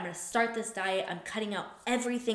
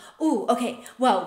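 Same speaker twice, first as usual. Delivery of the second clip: sudden, raised outburst bursting with excitement; 3 semitones higher, 7 dB louder than usual. Retelling a client warming up to her real goal: imitating sudden excitement. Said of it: "all this excitement and passion just comes".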